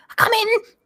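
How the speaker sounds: very high-pitched call. Narrating, a voice answers a knock on the double doors in a high-pitched voice. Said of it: "you hear a high-pitched voice go".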